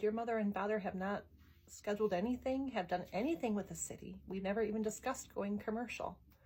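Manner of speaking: ordinary delivery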